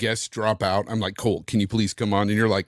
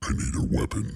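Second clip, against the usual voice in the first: deep, low, breathy voiceover narrator voice, near whisper; 5 dB quieter than usual. At chat's request, saying a line in a low voiceover voice. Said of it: "in your low voiceover voice".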